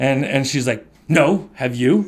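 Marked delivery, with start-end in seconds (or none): 1.1-2.1 put-on defensive tone, louder. Retelling how she answered a question about prayer: imitating a defensive reply. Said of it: "very defensively".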